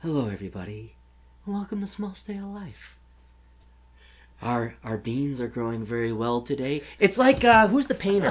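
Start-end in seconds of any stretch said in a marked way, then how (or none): 0.0-6.8 soft, sleepy public radio voice. Imitating a podcast host who sounds like NPR: imitating a sleepy NPR-style voice. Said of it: "it's N P R".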